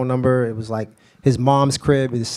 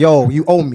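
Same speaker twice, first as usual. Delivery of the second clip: pumped-up, energetic, bold delivery; 5 dB louder than usual. Retelling his own phone call to a producer: imitating his own energetic demand. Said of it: "some energy with me".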